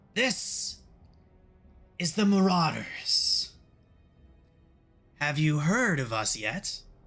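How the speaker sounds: put-on little imp voice, slow and drawn out. Voicing an imp who greets the party: imp voice. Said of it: "The imp asks you all".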